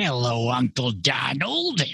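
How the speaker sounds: sing-song, bouncy, swooping cartoon character voice. Greeting Uncle Donald as a Duck nephew: Donald Duck's nephew voice. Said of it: "Which Duck nephew is that?".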